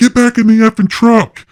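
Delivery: put-on, loud, very high shout. Retelling what they yelled at the others by the truck: retelling a yell. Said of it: "I'm yelling like".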